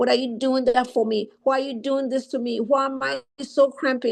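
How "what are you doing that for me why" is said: plain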